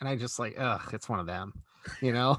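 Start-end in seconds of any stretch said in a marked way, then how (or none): 0.6-1.5 put-on annoyed grumbling mutter. Speaker acts out their own reaction to a goofy kid taking orders, imitating an annoyed mutter. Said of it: "sometimes I'm even annoyed".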